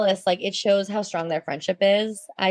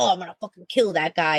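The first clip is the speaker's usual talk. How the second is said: put-on tough-guy voice. Describing how a character did not react, imitating a macho threat. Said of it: "all macho".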